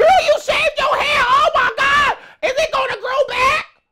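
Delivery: very high, bad put-on girl voice, shrill shout.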